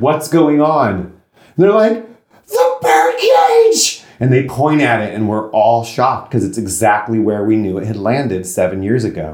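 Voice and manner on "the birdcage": very high, shrill, play-acted hysterical screaming. Retelling how people screamed and pointed at the birdcage, imitating hysterical screaming. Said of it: "hysterically screaming".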